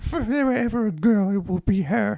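very high, sudden, high-pitched put-on voice. Podcasters joke about casting a character; the speaker delivers a line in a high-pitched voice. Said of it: "I don't know why I went high-pitched for that".

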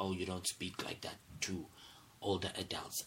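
ordinary delivery

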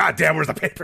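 furious, fed-up yelling. Retelling how a dad reacts when the paper is late: imitating a livid dad. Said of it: "he's fucking pissed. He's livid. He's like".

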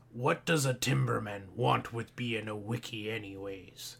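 low, creepy character voice. Doing an announced impression from The Lighthouse: Willem Dafoe impersonation. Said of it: "so I take that voice".

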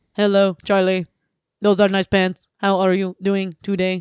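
talking like a robot, robotic delivery. Practicing a greeting to Charlie for a coach: talking like a robot. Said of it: "let's not talk like a robot".

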